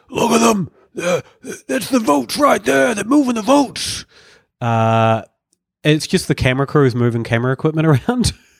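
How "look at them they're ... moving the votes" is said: very high-pitched, rasping, rough big voice. Retelling another man yelling out from a crowd, in a big voice. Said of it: "just in this big voice".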